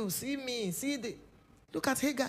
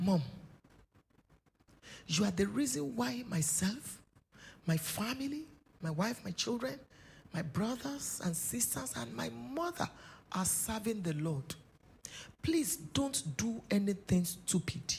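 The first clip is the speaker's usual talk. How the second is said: imitated whisper; 2 semitones lower, 3 dB quieter than usual. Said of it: "He just whispered to my ear and said".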